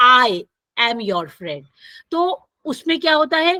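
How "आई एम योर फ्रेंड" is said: heavy stress on the word "I". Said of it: "मैं किस पे जोर दे रही हूँ, आई पे".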